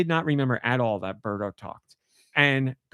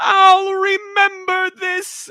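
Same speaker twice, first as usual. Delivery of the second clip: very high, raised, projected character voice; 8 dB louder than usual. Retelling what Birdo shouts when falling off the screen: Birdo voice. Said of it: "that's how she says it".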